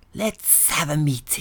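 put-on lizard creature voice. Speaker mimicking an Illuminati member calling a meeting, reptile voice. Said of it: "Trying to do a reptile voice there".

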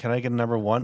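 ordinary talk

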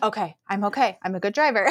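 ordinary talk

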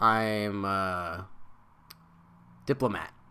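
put-on very low, dead-flat, bored deadpan monotone. Retelling a cartoon dad's line: imitating a bored, flat delivery. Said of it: "say it in the most boring way possible".

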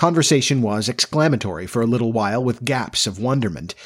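ordinary delivery, nothing marked

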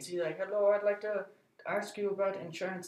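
put-on Indian accent. Retelling an insurance call, imitating the indian lady caller's accent. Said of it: "this Indian lady, and she was like".

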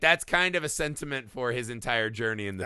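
normal talking voice

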